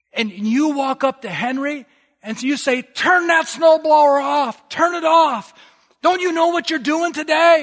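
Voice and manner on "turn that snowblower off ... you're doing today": put-on angry scolding, much higher pitched. Retelling someone scolding a man with a snowblower, imitating angry scolding. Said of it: "they are angry".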